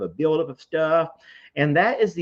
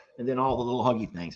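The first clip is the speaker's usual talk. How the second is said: usual speaking voice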